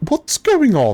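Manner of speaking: bewildered, lost-sounding tone. Game narrator voicing Gannis crawling out of his tent, in a confused voice. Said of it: "you hear a a rather confused voice".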